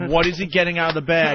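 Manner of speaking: ordinary talk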